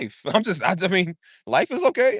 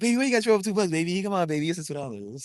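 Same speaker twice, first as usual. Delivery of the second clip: smooth, coaxing, charming, flirty sweet-talking tone; 3 semitones lower, 4 dB quieter than usual. Retelling how he once tried to get a woman's number, retelling smooth flirty talk. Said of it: "I'm a smooth criminal right there".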